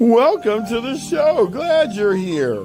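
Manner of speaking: high, cartoonish put-on character voice. Opening the show with a greeting to listeners: cartoon character voice. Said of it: "Sound like a cartoon character".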